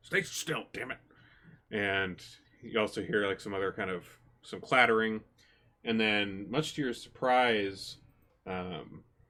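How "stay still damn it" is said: gruff, muffled voice. Narrator voices a voice the listeners hear, gruff muffled voice. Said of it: "kind of a gruff voice".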